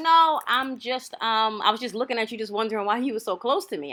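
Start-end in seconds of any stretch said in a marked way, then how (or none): none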